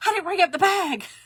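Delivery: put-on, high, frantic, alarmed, panicked blurt. Retelling what she said to Jim, reenacting her own panic. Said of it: "I was panicking".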